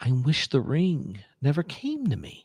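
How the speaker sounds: gentle, slow, innocent tone. Repeating a suggested quote in a soft innocent Frodo voice. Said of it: "I'll say it in my Frodo voice".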